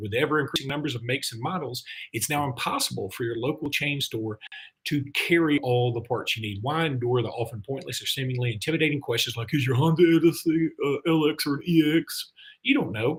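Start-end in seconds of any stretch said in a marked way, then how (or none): 9.5-12.3 slow, dopey, dim-witted guy voice. Reading an ad, the speaker voices the guy behind the counter in a dumb counter-guy voice. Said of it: "I don't know why I do that voice every time".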